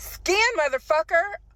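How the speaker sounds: mock, very high, shrill shouted outburst. Retelling a man yelling when an item would not scan; retelling a yell. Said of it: "He yells out".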